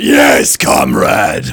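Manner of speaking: hammy, loud, over-the-top evil villain voice. Recalling being asked to make a character sound evil, over-the-top Soldier 76 voice. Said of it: "over-the-top, almost Soldier 76 voice".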